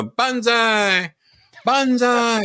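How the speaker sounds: put-on Japanese accent, yelled. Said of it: "you yell that".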